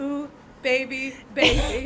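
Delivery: put-on creepy, eerie voice. Acting out a figure standing creepily in the corner: put-on creepy voice. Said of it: "standing in the corner, like, all creepily".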